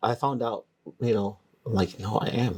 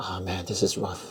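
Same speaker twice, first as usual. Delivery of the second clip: mock complaining tone; 3 semitones lower, 4 dB quieter than usual. Describing what he says once he starts to complain: imitating own complaining. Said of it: "'cause once I complain".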